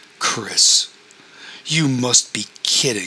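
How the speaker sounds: disgusted, revolted voice. Julian speaks to Chris as Ron looks on, in a disgusted voice. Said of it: "said Julian's disgusted voice".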